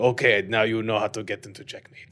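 put-on heavy, thick Russian accent, soft, laid on thick. Quoting a chess teacher after a game, in a thick russian accent. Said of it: "like very much like thick accent and and he's like".

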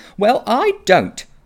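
very high, irritated retort. A girl answering a boy who says the magic works on him, cross. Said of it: "said Polly crossly".

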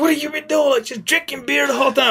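mock yelling. Telling a story about the coach who recruited him, retelling the coach's yell. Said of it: "And so he's like yelling".

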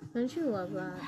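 plain, dry sarcasm. Reacting to a friend's stopped-up toilet: sarcastic. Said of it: "I'm being sarcastic".

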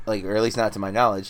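ordinary talk

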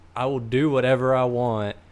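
usual speaking voice

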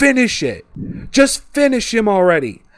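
put-on high-pitched urging scream. Retelling how she urged the fight to end: imitating someone screaming. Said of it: "LeRae is screaming at Tommaso".

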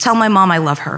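ordinary delivery

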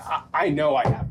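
ordinary delivery

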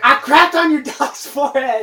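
excited screaming, very high, shrill and very loud. Retelling a game night, imitating a friend yelling at rivals. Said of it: "he's yelling, he's like".

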